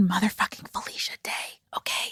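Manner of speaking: hushed, excited stage whisper. Host welcoming listeners to the show, saying it really quietly. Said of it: "I'm saying that really quietly".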